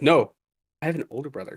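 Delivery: mock emotionless, dead-toned, totally confused-sounding delivery. Retelling a friend's surprising phone call: imitating a flat dead tone. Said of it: "he called me just dead tone".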